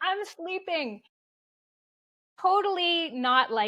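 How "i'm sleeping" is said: irritable, high, snapped barking voice. Retelling a reply to a husband who woke her: imitating barking at someone. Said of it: "I barked at him".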